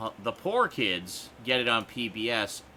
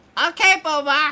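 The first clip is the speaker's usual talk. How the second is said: bad, very high, loud, squeaky puppet-like voice; 10 dB louder than usual. After someone says the phrase needs saying as Elmo, terrible Elmo voice. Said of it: "That's a terrible Elmo voice".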